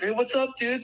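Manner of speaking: play-acted, very high-pitched shouting. Recounting a buddy yelling a greeting across the golf course; imitating a friend yelling. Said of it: "Starts yelling at him".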